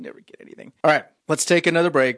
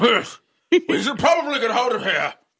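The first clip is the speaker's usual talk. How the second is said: put-on British accent, pitched much higher; 11 semitones higher than usual. Friend pitching a show about a mystery-solving bulldog, in Winston Churchill the bulldog's voice. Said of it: "a bulldog with a British accent".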